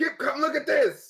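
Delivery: loud, very high calling yell. Calling Kip over in character to come look: yelling to someone. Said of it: "I'm gonna yell at Kip".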